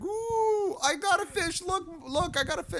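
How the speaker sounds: very high, drawn-out excited voice. Imitating a politician opening a bag of crackers as if fishing: Joe Biden impression. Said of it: "He's like".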